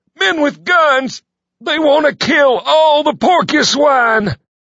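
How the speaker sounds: very high shout, dark with despair. A character who just burst in continues his warning: shouting in despair. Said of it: "He shouted aloud, dark with despair".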